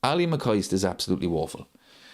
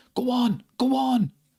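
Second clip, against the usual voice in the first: high, slow, excited shouting. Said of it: "you could literally hear Gary Neville shouting".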